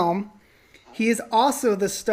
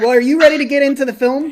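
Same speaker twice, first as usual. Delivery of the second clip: loud, fast, host-style shouting. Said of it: "Stop shouting".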